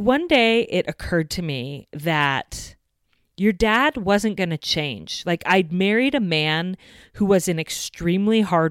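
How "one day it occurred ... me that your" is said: plain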